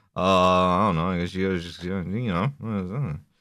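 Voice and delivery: uninterested, bored, low, trailing off. Retelling a bored reply from Barack Obama: imitating a bored Barack Obama. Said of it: "a clearly bored Barack Obama goes".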